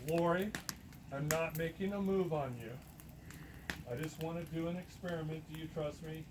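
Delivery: ordinary delivery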